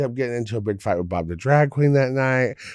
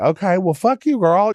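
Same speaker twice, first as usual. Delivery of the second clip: put-on angry, upset voice, higher pitch; 8 semitones higher, 4 dB louder than usual. Retelling an argument over cleaning the bus: imitating own upset retort. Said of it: "I got upset about it and was just like".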